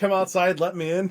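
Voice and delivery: loud, high-pitched yelling. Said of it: "We're both yelling".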